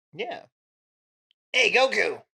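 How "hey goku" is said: raspy put-on voice. Joining in imitating grown-up Krillin: raspy adult Krillin voice.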